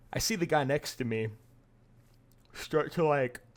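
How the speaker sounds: talking through a yawn. Telling a story about someone breathing on them, talking through a yawn. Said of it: "sorry, I'm yawning".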